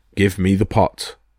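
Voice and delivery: ordinary delivery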